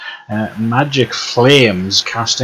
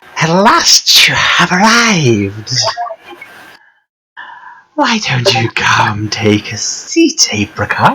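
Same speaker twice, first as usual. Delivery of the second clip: put-on crackling old crone voice, dry and rough; 3 semitones higher, 3 dB louder than usual. Voicing a crone in a tent greeting the arrival, crackling crone voice. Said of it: "Her voice crackles like dry weeds".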